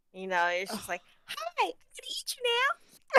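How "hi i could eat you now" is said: sweet, very high, bubbly creature voice. Describing a monster they chose, demonstrating how it talks: bubbly monster voice. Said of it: "monster with a bubbly voice".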